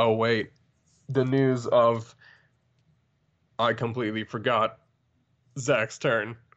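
robotic, machine-like delivery. Remembering it's a co-host's turn before the news, in a robot voice. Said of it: "Why am I talking like a robot?".

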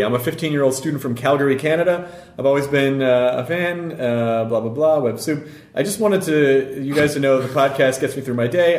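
plain

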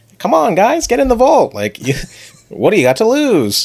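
bright, eager, very high, swooping chipper voice. Describing a character's younger self in a flashback, imitating a chipper young voice. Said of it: "he's like this chipper, like young".

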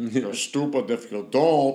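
put-on heavy, thick Puerto Rican accent, spoken slowly. Imitating a Puerto Rican friend urging him to apply: thick Puerto Rican accent. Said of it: "he had a nice, thick accent".

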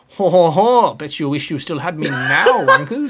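loud, chuckling, jeering gloat. Imagining a former team principal laughing from France: Cyril Abiteboul impression. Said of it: "That's my Cyril Abiteboul impression".

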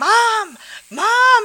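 high-pitched, loud yelling.

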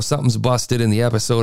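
normal talking voice

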